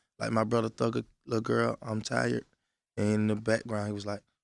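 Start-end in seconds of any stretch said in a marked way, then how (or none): none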